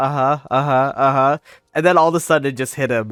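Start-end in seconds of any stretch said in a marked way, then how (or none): 0.0-1.4 mock zoned-out, spaced-out uh-huhs, slower. Speaker acting out a man who wasn't listening, imitating someone phased out. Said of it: "he was completely phased out".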